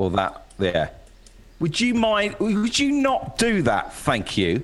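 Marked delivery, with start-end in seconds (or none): 1.6-4.6 stern, strict voice, much higher. Asked what their stern voice sounds like, showing it: stern voice. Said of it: "What's your stern voice?".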